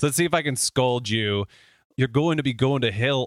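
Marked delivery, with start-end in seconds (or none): 1.9-3.3 attempted Irish accent, scolding tone. Trying to scold the listener, doing Gerard Butler's accent as an attempted Irish accent. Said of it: "an Irish accent".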